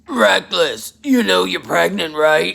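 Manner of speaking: big, loud, rough, gruff woman's voice. Retelling what a woman said while the speaker awaited a prison cell assignment; gruff woman's voice. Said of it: "a very large woman with a very gruff voice came in and said".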